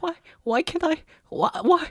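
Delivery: high, whiny, distressed muttering under the breath. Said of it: "muttering to myself".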